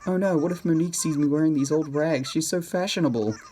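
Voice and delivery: high, mocking, teasing put-on caricature voice. Speaker performs an impression of the listener's inner self: mocking imitation of the listener. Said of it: "my impression of the inner you".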